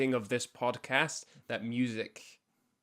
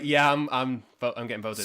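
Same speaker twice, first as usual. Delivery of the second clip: normal talking voice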